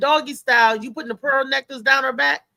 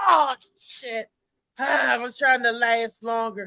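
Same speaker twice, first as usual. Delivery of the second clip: slow, put-on mad, complaining tone. Imitating a man who acts mad after finishing too soon: imitating a man acting mad. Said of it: "they act like they mad".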